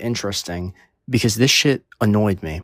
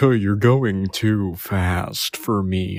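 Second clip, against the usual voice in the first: very slow, put-on, fake sophisticated posh drawl. Retelling what the high phone seller said: imitating a fake sophisticated man voice. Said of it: "putting on this fake fucking sophisticated man voice".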